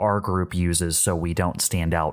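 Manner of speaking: plain reading voice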